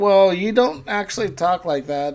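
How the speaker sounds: normal talking voice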